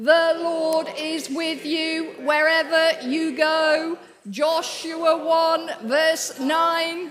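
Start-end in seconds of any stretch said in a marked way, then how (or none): 0.0-4.0 put-on robot voice, higher and louder.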